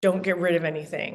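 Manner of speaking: put-on intimidating, menacing tone. Retelling what he said while scowling: imitating an intimidating tone. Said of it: "in an intimidating way".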